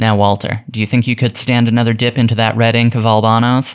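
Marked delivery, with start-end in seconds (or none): none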